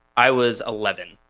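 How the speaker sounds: ordinary talk, nothing marked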